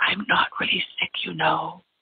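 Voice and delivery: put-on whisper. Retelling a cat's thought heard in the mind: imitating a whispered thought. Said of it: "it kind of sounds like this".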